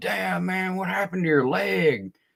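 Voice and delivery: put-on high-pitched, drunken hollering shout. Retelling a drunk old man walking up to him: imitating a drunk man screaming. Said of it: "Just screaming in my face".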